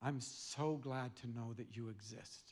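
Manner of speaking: put-on whisper. Retelling what a friend whispered in the ear at goodbye: retelling a whisper. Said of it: "he whispers in my ear".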